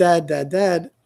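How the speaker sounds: normal talking voice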